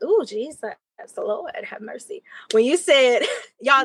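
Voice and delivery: emotional, teary voice holding back tears. Answering how the conversation felt for them, holding back tears. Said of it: "this is me trying to hold back the tears".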